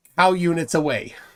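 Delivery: ordinary talk, nothing marked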